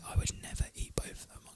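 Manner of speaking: whispering. Imitating the other speaker whisper arguing behind the guests' backs: imitating a whisper argument. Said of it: "A S M R. Let me do it".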